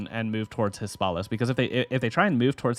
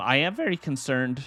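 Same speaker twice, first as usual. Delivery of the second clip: voice cracking and breaking on the words; 4 semitones higher than usual. Closing out a gaming video for viewers, voice cracking mid-sentence. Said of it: "sorry about the voice crack".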